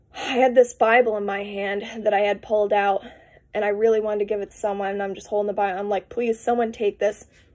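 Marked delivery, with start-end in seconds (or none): 6.1-7.3 put-on pleading, begging tone. Retelling own words to people in a line: imitating own begging. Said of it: "begging all of them in the line".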